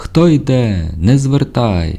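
slow, high, drawn-out shouted call. An unseen person calls out to the narrator through thick fog: shouted through the fog. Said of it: "почув крізь туман крик".

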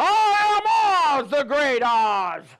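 thundering, booming, slow, drawn-out, grand delivery. Retelling The Wizard of Oz, voicing the great Oz before the flames. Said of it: "and he's going".

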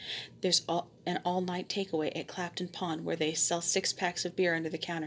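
ordinary delivery

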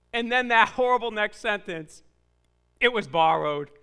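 ordinary talk

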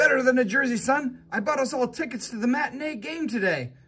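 very high, eager, excited blurt bursting out. Mac answers his son Grego's question about new jerseys; blurting it out. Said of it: "Mac blurted more than said".

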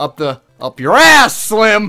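yelling loudly.

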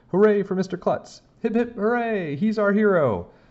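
very high, excited cheering shout. The kids cheer Mr. Klutz after he tosses down the lunchbox: shouting. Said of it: "We all started shouting".

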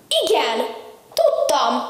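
crying out happily, joyful. Narrator reading a Christmas story, opening the door, happy exclamation. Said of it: "Kiáltottam fel ekkor boldogan".

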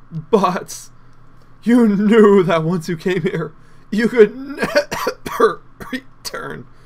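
talking through a cough. Reading a line of dialogue aloud, coughing while talking. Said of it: "try not to cough and talk at the same time".

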